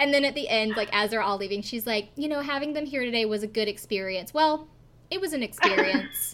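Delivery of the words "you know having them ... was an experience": mock bone-dry, understated deadpan with no reaction. Retelling what a woman said as everyone was leaving: imitating a deadpan delivery. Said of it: "she is so deadpan the entire time".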